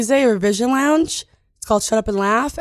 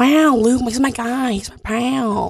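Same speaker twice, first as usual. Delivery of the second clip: put-on laid-back drawl. Calling Luke a pal on the radio: Owen Wilson impression. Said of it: "your Owen Wilson impression".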